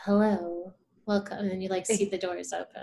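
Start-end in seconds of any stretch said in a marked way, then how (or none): 0.0-1.4 stately, formal ceremonial voice. Describing voices heard as doors open: imitating a ceremonial welcome voice. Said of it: "the ceremonial".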